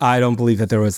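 ordinary delivery

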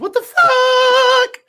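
very high, shrill head-register cry with "fuck" stretched. Saving their voice before a studio session, a speaker talks in head voice. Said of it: "I'll use my head voice".

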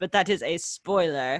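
normal talking voice

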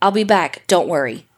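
ordinary delivery

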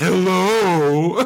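mocking, drawn-out hello, high-pitched and mean. Retelling the Grinch answering kids' hello: imitating the Grinch mocking a greeting. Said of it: "he'd go".

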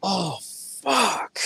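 acted-out, low-key yelled outburst, kept soft. Retelling how someone in the quiet crowd reacted: imitating a fan yelling out. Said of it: "someone just yells out".

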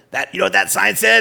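gravelly, raspy, rough chronic-smoker rasp. Retelling what a stepbrother said about a road sign: imitating Mitch's raspy smoker voice. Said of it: "he had this raspy voice that sounded like he was a chronic smoker".

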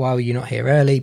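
ordinary talk

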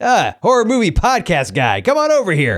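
sarcastic swooping high tone. Retelling getting a picture taken: imitating snarky Bruce Campbell. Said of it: "wonderfully snarky Bruce Campbell way".

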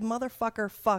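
loud yell. Retelling a yell during surgery at the surgical center: imitating own yelling. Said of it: "I yelled".

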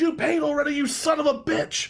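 play-acted, very high, shrill screaming rant. Retelling what a man screamed at him over a tip, imitating someone screaming. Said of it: "And he screams".

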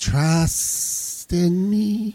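high, very slow, hypnotic snake voice. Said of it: "That Snake Boy".

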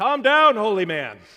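very loud, high-pitched scream. Retelling what he screamed while taking blood pressure: imitating a scream. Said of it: "he screams at me".

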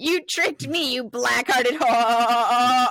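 loud talking-goat voice. Retelling a movie scene where the voice moves into a goat: imitating a talking goat. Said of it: "That's what the goat would sound like if he talked".

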